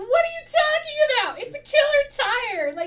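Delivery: thrilled, raving voice.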